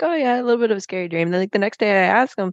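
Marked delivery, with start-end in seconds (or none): 0.0-1.3 mock offhand, casual, unbothered nonchalant tone. Retelling a husband's reply after a nightmare: imitating a nonchalant husband. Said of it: "so nonchalant".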